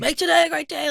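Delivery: very loud, high-pitched motivational shout. Retelling mornings when a parent yelled on leaving the house: imitating someone yelling. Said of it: "you're yelling at me, like".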